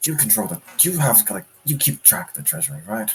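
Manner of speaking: quiet, hushed in-character whisper. Voicing a character asking a companion about the treasury: whispering. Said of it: "Ymir whispers to Vanitas".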